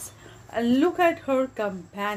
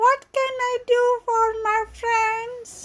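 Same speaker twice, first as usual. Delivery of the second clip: tiny, very high, squeaky little mouse voice; 14 semitones higher than usual. Narrator reads the mouse Queen's question to Dorothy, in a squeaky little voice. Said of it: "in her squeaky little voice".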